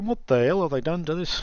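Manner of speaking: acted elderly man's voice. Imagining going back to it now after all the patching, in an old man voice. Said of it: "same old man voice".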